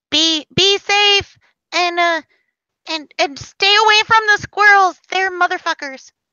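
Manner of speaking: high, squeaky little talking-mouse character voice. Voicing a mouse who thanks the party and warns them. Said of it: "and the mouse scampers off".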